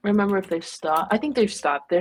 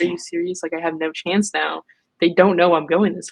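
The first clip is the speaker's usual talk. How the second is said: ordinary talk, nothing marked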